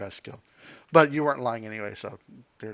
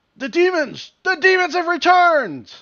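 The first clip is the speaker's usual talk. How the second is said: very loud, very high-pitched alarmed yelling cry; 11 dB louder than usual. Voicing a guard who spots the party approaching: yelling in character. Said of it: "the first of them yells out".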